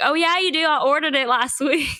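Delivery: put-on country accent. Retelling placing an order, replying to the worker, in a put-on country accent. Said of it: "I decided to do a country accent".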